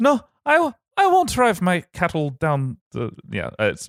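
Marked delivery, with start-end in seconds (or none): 0.0-2.8 very high, clumsy, bad Irish pirate accent. Retelling a myth character's refusal, trying a bad irish pirate accent. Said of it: "it's not good".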